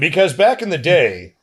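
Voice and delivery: on-air DJ radio announcer delivery. Answering a question about television versions of movies, in a radio voice. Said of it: "I got my radio voice going on".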